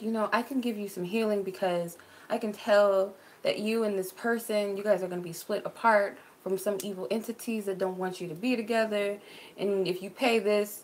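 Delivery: normal talking voice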